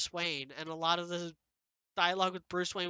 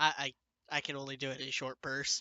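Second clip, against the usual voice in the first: normal talking voice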